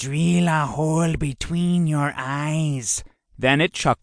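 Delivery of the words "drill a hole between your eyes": slow, echoing reptilian drawl, "eyes" drawn out. Narrating an iguana mimicking its master's threat, in a reptilian voice. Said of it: "mimicked his master in a reptilian voice".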